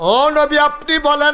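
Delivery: high, loud, pleading shout.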